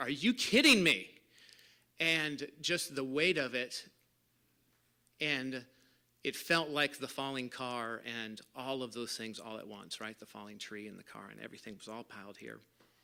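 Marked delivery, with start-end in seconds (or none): 0.0-1.1 very loud, pitched-up scream of disbelief. Recalling a walk on a golf course, the speaker retells screaming at the universe. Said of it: "kind of screaming at the universe".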